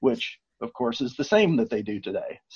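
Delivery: dry, tongue-in-cheek sarcastic tone. Commenting on voters in an earlier period to another speaker: sarcastic. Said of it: "I'm being sarcastic in both of those".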